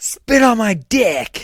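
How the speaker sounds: put-on loud holler, very high, slow and drawn-out. Retelling what a man at the train station yelled, imitating a man yelling. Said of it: "He would yell at us all the time".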